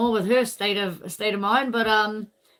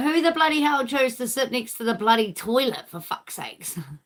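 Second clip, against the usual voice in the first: put-on grandma character voice; 3 semitones higher than usual. Retelling the grandmother's complaint about sitting by the toilet: imitating Nana. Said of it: "Nana's like".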